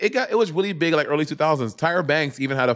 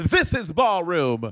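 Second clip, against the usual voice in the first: put-on sassy voice, pitched higher; 4 semitones higher than usual. Imitating a guest who reads the two hosts down: imitating Leomi Maldonado reading someone down. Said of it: "That is not even how Leomi talks".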